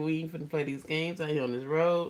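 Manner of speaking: usual speaking voice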